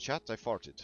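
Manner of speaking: serious French newsreader voice. Mimicking how a newsreader says ChatGPT, in a serious French newsreader voice. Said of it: "in the very serious French news person voice".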